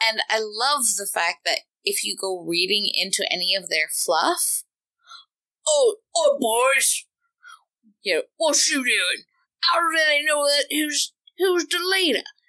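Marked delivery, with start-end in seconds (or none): 5.7-12.2 hammed-up, high-pitched, bad Cockney accent, orc voice. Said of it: "sorry if that's an absolutely horrible Cockney accent".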